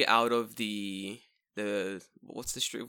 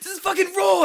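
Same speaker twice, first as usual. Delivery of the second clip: furious, very high, very loud scream; 12 dB louder than usual. Doing your best impression of him screaming at someone from the kitchen, Gordon Ramsay screaming impression. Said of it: "best fucking Gordon Ramsay screaming at you from the kitchen".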